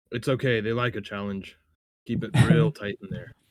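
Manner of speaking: fake, put-on stage whisper. Leaning down to a companion dragging his feet at the door: fake whisper. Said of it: "lean down and faux whisper".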